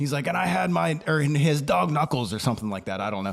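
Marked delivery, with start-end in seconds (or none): 0.3-2.3 pitched-up, rambling storyteller's voice. Retelling a man's story about meeting him, the speaker uses his Stoneman voice. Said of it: "I'm using my Stoneman voice".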